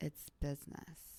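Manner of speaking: mock sly delivery. Imitating another realtor's favourite saying: imitating a sly tone. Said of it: "say it so sly".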